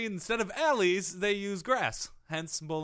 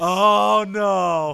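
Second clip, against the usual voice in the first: loud, blurted mock angry outburst. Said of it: "I am so angry".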